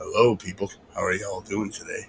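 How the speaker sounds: very low, silky, smooth broadcaster radio voice. After saying someone has a radio voice, the speaker tries it: smooth radio voice. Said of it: "I wish I sounded like that".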